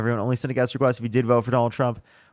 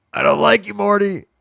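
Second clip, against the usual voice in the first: very high, rough, scratchy, raised voice; 9 semitones higher, 7 dB louder than usual. Showing how a previous caller sounded, Rick Sanchez voice. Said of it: "he sounded like Rick Sanchez".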